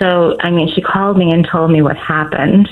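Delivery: ordinary delivery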